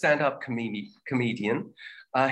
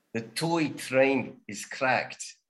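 put-on South African English accent. Repeating a practice sentence after another speaker: south african accent. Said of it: "it's easier to do a South African accent".

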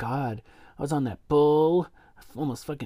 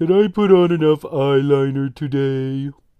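mopey voice, louder; 9 dB louder than usual. Voicing Drackmorta fussing over makeup while someone gets killed; Eeyore voice. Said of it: "I have to do, like, an Eeyore voice".

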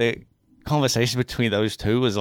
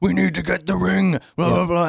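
put-on angry elf voice, much higher pitch; 7 semitones higher, 3 dB louder than usual. Speaker describes a game cinematic's elven spirit character, imitating an angry elf guy. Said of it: "this angry elf guy that's like".

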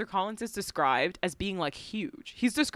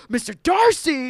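insistent, loud, high calling shout; 5 semitones higher, 8 dB louder than usual. Retelling a scene where one man calls another's name, imitating Mr. Collins shouting. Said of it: "Like shouting this other man's name".

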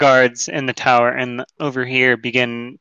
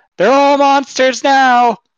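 very high-pitched, loud shout; 13 semitones higher, 6 dB louder than usual. Voicing a prisoner who shouts back at a player: shouting back as a prisoner. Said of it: "One of them shouts back at you".

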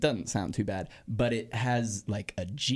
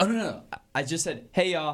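usual speaking voice

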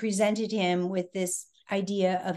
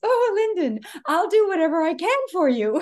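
very high, raised upper-crust society voice; 9 semitones higher, 6 dB louder than usual. Retelling a phone call from the president, her society voice. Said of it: "in her society voice".

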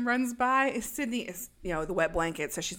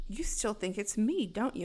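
usual speaking voice

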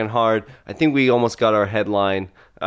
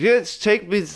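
put-on slurred speech, much higher pitch; 11 semitones higher than usual. Retelling a film scene, speaker imitates the woman in the car slurring her speech. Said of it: "She is slurring her speech".

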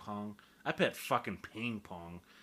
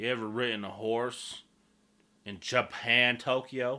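put-on country accent, louder; 4 semitones higher, 10 dB louder than usual. Speaker riffing on the Olympics being in Tokyo, in a redneck country voice. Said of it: "That's how a real redneck would describe Tokyo".

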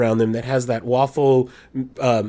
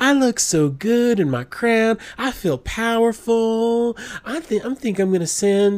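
very high-pitched, overdone, exaggerated put-on Arkansas accent; 10 semitones higher than usual. Imitating a woman she hopes will hear the episode, in an exaggerated Arkansas accent. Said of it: "She doesn't really talk like this".

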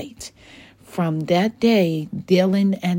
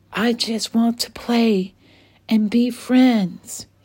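mild, gentle, higher-pitched; 5 semitones higher than usual. He flies back to the playground children with a surrender flag, speaking softly. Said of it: "he said softly".

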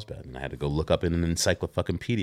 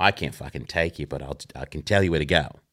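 imitated Australian accent. Retelling what a surfer told him, imitating an Australian accent. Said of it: "The accent".

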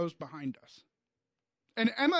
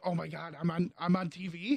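plain

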